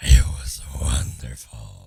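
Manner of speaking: booming, very deep, rough, raspy voice. Asked to repeat your answer about your vacation, say it sounding like a smoker. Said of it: "some smoker out there".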